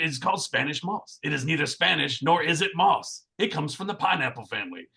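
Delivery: hoarse, rasping, raspy voice. Retelling what a lady on a Savannah bus tour said, in a raspy smoker's voice. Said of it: "her just raspy voice".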